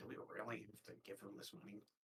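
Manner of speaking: barely audible, very quiet, whispered mumble. Scrap speaking aside to Syl: quiet mumble. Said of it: "really quietly just kind of mumbles".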